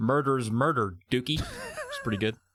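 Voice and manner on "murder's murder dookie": put-on strong, heavy Southern accent. Quoting a line from the movie: strong southern accent. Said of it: "I got really Southern there for a second".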